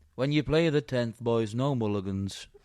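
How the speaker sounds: put-on Birmingham accent. Imitating a golf starter who spoke to the boys: imitating starter in Brummy accent. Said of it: "Is that your Brummy accent?".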